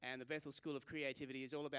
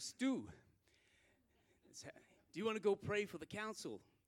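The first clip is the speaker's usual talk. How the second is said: put-on American accent, pitched up; 7 semitones higher, 5 dB louder than usual. Telling a story, he quotes Joel calling out to him: imitating Joel's American accent. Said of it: "That's my best American impersonation".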